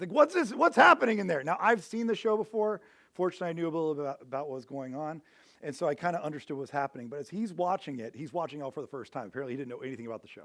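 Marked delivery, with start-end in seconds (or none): 0.1-1.4 loud, high-pitched, angry shouting. Retelling how a man yelled at a screen: imitating yelling at a screen. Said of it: "he is just yelling at this screen".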